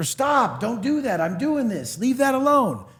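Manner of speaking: play-acted, high-pitched, exasperated, frustrated nagging tone. Retelling what the stepdaughter says to the baby, imitating a frustrated scolding. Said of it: "her frustration with her".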